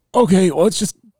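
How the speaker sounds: play-acted, pitched very high, choked up, holding back tears. Retelling her words as she holds back tears: imitating someone choking up. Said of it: "she was choking up, trying to hold tears back".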